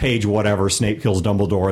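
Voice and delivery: ordinary talk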